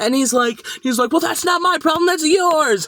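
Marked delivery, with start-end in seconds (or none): 1.1-2.9 raised, dismissive yell, barked sharply right back. Retelling an argument about having no schedule, imitating the man yelling. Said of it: "he's like fucking yelling at us".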